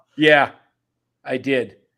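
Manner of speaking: mock irritated, loud, a little pissed off. Retelling a pitcher's answer about being taken out: imitating Logan Webb's annoyed tone. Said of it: "I'm a little pissed off".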